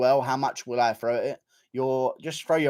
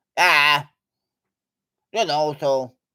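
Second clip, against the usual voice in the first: put-on sheep-like voice, louder; 4 dB louder than usual. Acting out Leon Edwards answering a question: Leon Edwards impression. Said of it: "that's how Leon Edwards responds to someone saying a sentence".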